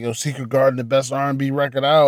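ordinary delivery

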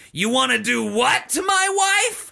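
shrill, raw, very high screech. Reading a story aloud, a villain suddenly calls out: shrill shriek. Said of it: "a shrill voice shrieks".

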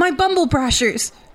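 very high, desperate-sounding crying out. Narrating as the crowd erupts into an uproar, Warble crying out. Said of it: "Warble cries out".

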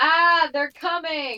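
very loud, high, frantic alarmed yell. Playing a character warning others as goblins approach: yelling in character. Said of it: "I yell".

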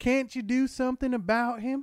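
very high, loud, unconvincing put-on Texan accent. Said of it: "that is not how Texan".

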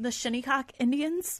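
fighting back a laugh. Reading out strike two on a list, trying not to laugh. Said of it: "I'm going to try to say this without laughing".

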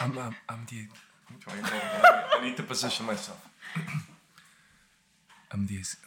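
soft, low, ASMR-style near-whisper. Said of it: "it's very soft".

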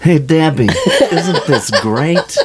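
high voice swinging up and around in pitch. Asked by another speaker to do a Fast Times at Ridgemont High character: Damone impression. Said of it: "do your Damone".

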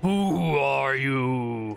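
giant voice calling out, stretching the word "you". Narrating a game, the speaker voices a giant calling out to the player. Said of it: "And the giant calls out to you".

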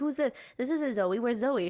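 ordinary delivery

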